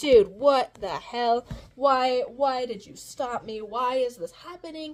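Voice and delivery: put-on angry voice. Retelling a scene from the story: imitating Eleanor pissed off. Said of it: "And Eleanor's pissed off".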